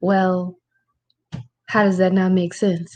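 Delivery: normal talking voice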